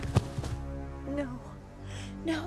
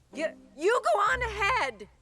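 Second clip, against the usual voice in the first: yelling, higher and louder; 4 semitones higher, 7 dB louder than usual. Hesitating at a road, telling the other to go on ahead: yelling across a short distance. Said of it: "Why are you yelling?".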